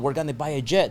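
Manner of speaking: normal talking voice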